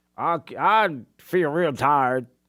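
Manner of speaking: thick, heavy, very slow Southern drawl. Imitate how he talked when he walked in this morning, in a put-on heavy Southern accent. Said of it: "heavy Southern accent".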